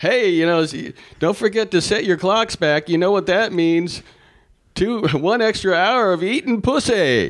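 very high, shouted call. Speaker re-enacts yelling a line out to an audience: retelling own yell. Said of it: "I yelled out".

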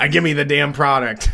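strained speech forced through gritted teeth. Describing Rick's gritted teeth thing: Rick impression through gritted teeth. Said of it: "gritted teeth thing where he's just like".

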